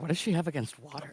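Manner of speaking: muttering under breath. Muttering in character while following another player: muttering under breath. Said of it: "I'm just under my breath".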